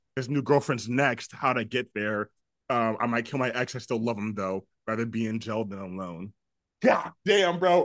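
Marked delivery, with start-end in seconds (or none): none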